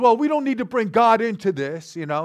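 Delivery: fake worked-up tone. Retelling a woman's answer to the speaker's question about God, imitating someone getting upset. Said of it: "she got all upset".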